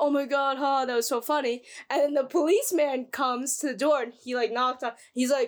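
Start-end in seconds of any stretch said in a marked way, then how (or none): none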